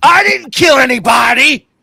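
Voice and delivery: very high, loud, slow belted delivery. Quoting a favourite movie line: Denzel Washington line delivery. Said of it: "I love the way he delivers that line".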